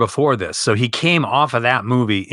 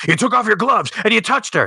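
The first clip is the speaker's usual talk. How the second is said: mock screaming, pitched higher; 10 semitones higher than usual. Retelling a movie scene, imitating a character screaming at the TV. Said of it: "he's screaming at the T V".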